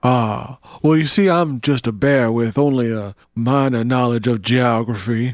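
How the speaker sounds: drawling Southern bear voice. Improvising a bear judge in a courtroom: Southern bear drawl. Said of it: "a Southern bear with a droll".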